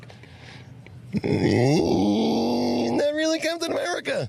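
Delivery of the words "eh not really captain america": odd, very high upper-register falsetto. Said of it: "I'm trying to think of how to do it".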